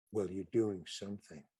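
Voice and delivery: very quiet, low, hushed, confidential half-whisper. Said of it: "leaned in a little closer".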